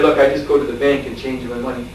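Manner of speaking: ordinary delivery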